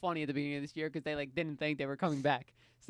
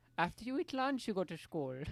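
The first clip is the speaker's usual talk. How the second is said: high, put-on German-sounding accent; 6 semitones higher, 3 dB quieter than usual. Imitating a mother telling a child about school: German accent. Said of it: "these are, like, German accents".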